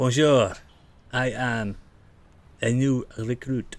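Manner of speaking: butchered fake French accent. Answering two people who turned and drew swords, in a bad french accent. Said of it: "butchering the French accent".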